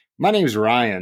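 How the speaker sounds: fake cheerful voice, slowed. Telling how a man answered people who called him Brian, imitating Goggenmeyer's upbeat reply. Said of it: "he would say it kind of upbeat like that".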